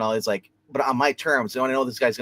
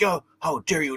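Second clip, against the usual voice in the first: acted, hot-headed tough TV cop yelling; 4 semitones higher than usual. Retelling a TV show scene where a cop yells: imitating a cop yelling. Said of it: "the fat cop is, like, yelling".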